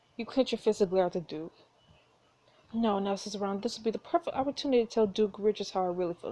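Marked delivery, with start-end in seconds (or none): none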